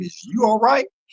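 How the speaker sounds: playful, mocking, high-pitched teasing tone. Retelling teasing a fellow inmate at the cell: retelling a smirking tease. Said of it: "a smirk on my face".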